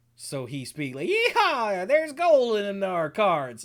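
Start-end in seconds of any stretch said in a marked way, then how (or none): 1.1-3.7 loud, swooping, drawn-out, slow sing-song character voice. Imitating a masked game boss talking in character: Prospector voice. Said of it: "talks in the Prospector's voice".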